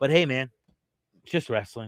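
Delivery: put-on, very heavy, dripping sarcastic tone. Finishing a wrestling booking opinion with a dismissive remark: very sarcastic. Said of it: "I said that very sarcastically".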